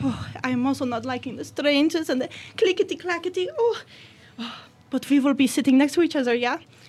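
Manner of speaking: high-pitched Swedish accent.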